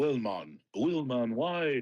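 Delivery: put-on Jamaican accent on every word. A player speaking in character for the first time in weeks: Jamaican accent. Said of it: "he's a Jamaican".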